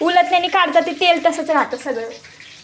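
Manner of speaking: loud, high shout.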